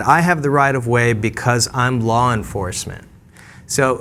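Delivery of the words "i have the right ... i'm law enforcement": ordinary delivery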